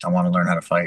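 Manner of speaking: mock-deadpan, flat delivery. Retelling how they answered why they wanted to come, completely deadpan. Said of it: "I said it like completely deadpanned".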